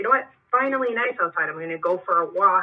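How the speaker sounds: ordinary delivery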